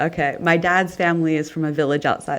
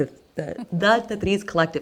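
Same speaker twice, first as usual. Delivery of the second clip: excited stutter, much higher pitch; 2 semitones higher than usual. Telling listeners in europe to reach out and get involved, excited stuttering. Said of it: "I'm stuttering, guys. I'm so excited".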